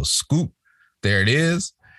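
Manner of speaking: very slow, deliberate. Retelling naming his Geico commercial on a Zoom call, said real slow. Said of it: "I said it real slow".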